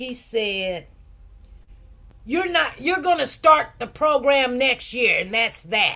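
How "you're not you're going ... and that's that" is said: play-acted, harsh, authoritative voice. Retelling what he said on the phone: imitating a harsh authoritative voice. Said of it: "he said in a real harsh voice".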